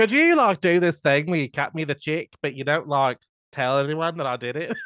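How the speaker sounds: bad, poorly done, put-on Australian accent. Acting out a quoted request to keep a secret, in a poor man's Australian accent. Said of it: "Sorry for my poor man's Australian accent".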